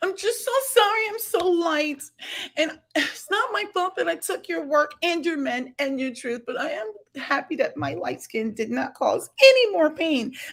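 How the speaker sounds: weepy, tear-filled, high crying voice. Mocking the ones who caused the offense, imitating someone crying. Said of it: "And all of these tears".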